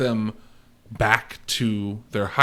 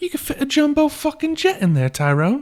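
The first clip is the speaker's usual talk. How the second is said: over-the-top bad Cockney, very high and loud; 5 dB louder than usual. Describing quoting Snatch when parking in a huge spot, bad Cockney accent, Snatch quote. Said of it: "bad Cockney accents".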